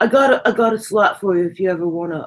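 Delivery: put-on Brooklyn accent, laid-back and smooth. Retelling an offer from the owner's friend, imitating Craig's Brooklyn accent. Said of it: "He he talked like he was from Brooklyn".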